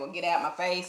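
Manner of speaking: ordinary talk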